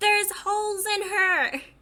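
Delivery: full-throated, high, drawn-out character shout. In a group role-play, a player's character points and calls out, yelling. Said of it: "Can I yell?".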